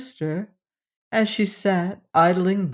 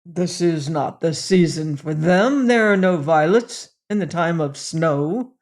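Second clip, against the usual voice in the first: gruff, rough voice; 3 dB louder than usual. Reading a fairy tale, January answers the girl: gruff voice. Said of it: "said January in his gruff voice".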